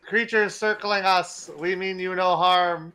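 shrill, all-out screaming, very high and very loud. A player's character tries to speak to circling creatures, screaming. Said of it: "I'm like screaming".

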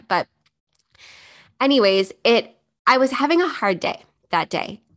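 slow, emotional, choked-up voice close to tears. Podcast host talks after reading a message that moved her, choked up. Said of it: "I'm going to get a little choked up now".

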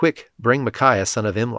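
ordinary delivery

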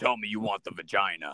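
put-on deep, manly voice. Retelling what a woman standing at the bed's edge told a man, in a manly Batman-like deep voice. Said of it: "In like a manly type voice like that".

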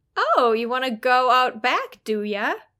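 playful, teasing, sing-song voice. Explaining tone in dialogue with examples, demonstrating a playful tone. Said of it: "A playful tone".

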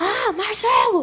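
enraged, furious shout, pitched very high. Speaker retells asking a frustrated man his name again, retelling an angry shout. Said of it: "ele respondeu gritando".

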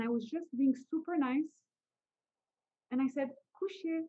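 ordinary delivery

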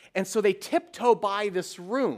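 ordinary talk

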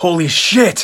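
sudden, high, yelled-out outburst. Recapping a scene, voicing what a character yells out: retelling a yell. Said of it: "Gunther yells out".

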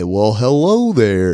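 daft, goofy, silly voice. When she comes back upset and angry-faced, he greets her in a goofy tone of voice. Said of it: "just throw out some goofy ass tone of voice".

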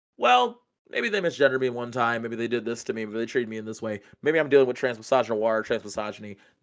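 ordinary talk

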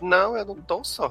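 mocking delivery. Retelling what she answered when questioned: imitating a mocking tone. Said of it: "meio num tom de deboche".

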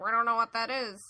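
mumbling like a horse. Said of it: "mumbling to each other".

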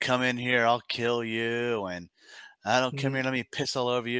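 ranting in a contained, half-voiced yell. Retelling how a jailed man threatened the guards: imitating a prisoner yelling at guards. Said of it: "this dude's just yelling at guards".

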